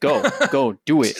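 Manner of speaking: irritated, angry, pushy, hurried tone. Mocking how a co-host told someone to go first: mock-angry urging. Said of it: "You're like".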